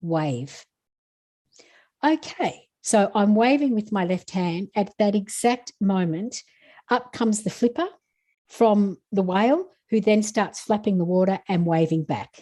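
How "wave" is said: very stern, no-nonsense, curt delivery. Retelling a message heard inwardly: imitating a stern voice. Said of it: "this really stern voice of".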